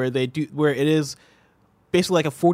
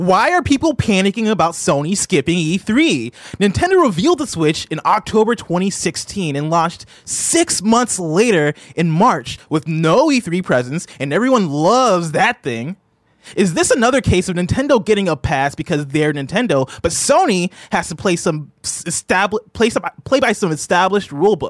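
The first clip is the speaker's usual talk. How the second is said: loud, high-pitched, heated angry yelling; 5 semitones higher, 6 dB louder than usual. Asked to do the voice at Blessing, put on an Angry Greg voice. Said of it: "So Angry Greg voice".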